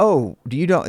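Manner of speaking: normal talking voice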